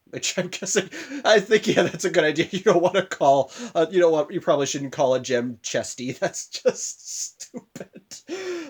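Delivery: slow, laughing through the words. Recapping an episode, laughing at their own immaturity while talking. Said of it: "I'm laughing at my own immaturity".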